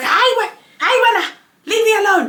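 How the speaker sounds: put-on very high, irritated, drawn-out dismissive tone. A mother retelling how she used to answer her child, mock-irritated snapping. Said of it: "I used to get irritated".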